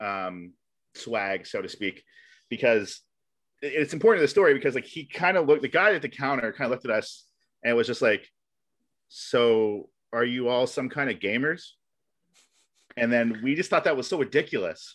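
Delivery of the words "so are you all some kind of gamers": slow, judgy, passive-aggressive tone. Retelling how the cashier asked about the group: imitating a judgy cashier. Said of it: "he said it so judgy".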